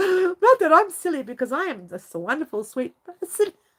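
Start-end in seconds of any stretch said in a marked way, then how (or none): 1.9-3.5 speaking through laughter. Joking about being a wonderful, sweet person, laughing while talking. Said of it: "I still can't say that without laughing".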